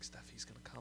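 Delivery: fast, urgent whisper.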